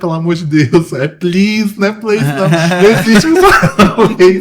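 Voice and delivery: speaking through laughter.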